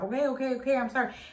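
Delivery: appeasing, backing-down tone. Retelling the other driver apologising with his hands up: imitating a man backing down. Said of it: "this is with his hands up".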